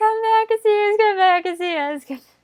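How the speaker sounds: very high cartoon lady character voice. Describing how the female characters on Jungle Jam sound, doing a Jungle Jam lady character voice. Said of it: "every single lady character is like".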